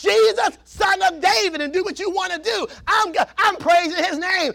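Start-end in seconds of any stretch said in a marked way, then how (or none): 0.0-1.6 mock slow, rough yelling out. Acting out a blind man calling to jesus: acting out a blind man yelling. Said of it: "I'm yelling out".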